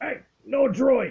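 very high, loud, very gruff alien voice. Narrating for players entering a cantina, voice an alien in a very gruff alien voice. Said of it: "you hear a very gruff alien voice say".

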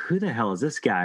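ordinary delivery

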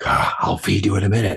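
stage whisper from a squeezed, constricted throat. Retelling speaking to the dogs this morning: imitating own whisper.

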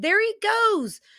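high, loud, drawn-out yell.

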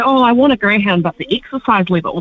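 normal talking voice

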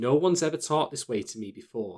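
plain

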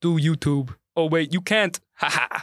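teasing, taunting dad-style voice. Redoing the bit from his dad impression, imitating his dad. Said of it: "That's his dad".

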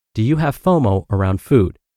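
plain

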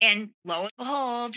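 ordinary talk

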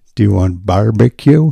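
put-on Indian accent. Recounting a Burger King drive-thru worker's question, doing an Indian accent impression. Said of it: "he was an Indian dude".

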